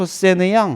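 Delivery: fake French accent with twisted pronunciation. Twisting a memory phrase in a lesson, mock French accent. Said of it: "조금 말을 꼬우면 표세느 양. 프랑스 발음 안 나요?".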